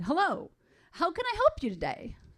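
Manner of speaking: upbeat man's voice, sing-song. Reading the water delivery man answering a call, in a cheery male voice. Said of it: "a cheery male voice said".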